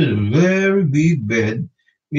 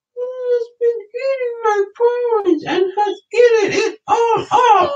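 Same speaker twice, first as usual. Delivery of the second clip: very high, tiny, squeaky storybook voice. Reading the three bears story aloud, the narrator voices Baby Bear: Baby Bear's tiny little voice. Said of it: "said in a tiny little voice".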